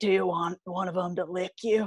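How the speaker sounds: rough, gruff, grizzled ex-con type man's voice. Retelling what a grizzled tiger keeper said: imitating a gruff man. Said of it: "a very gruff".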